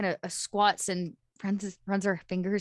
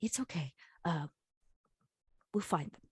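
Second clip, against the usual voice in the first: soft, hushed whisper, close in the ear; 2 semitones lower, 8 dB quieter than usual. Voicing a character comforting a dog she found: whispering. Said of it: "she kind of whispers in the dog's ear".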